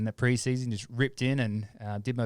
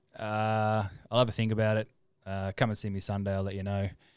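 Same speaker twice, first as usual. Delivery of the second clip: ordinary talk, nothing marked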